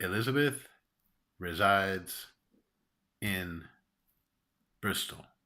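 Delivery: clipped, flat staccato syllables with no intonation. Reading out an example sentence someone sent, flat staccato, no intonation. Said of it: "without any kind of intonation, just sort of staccato".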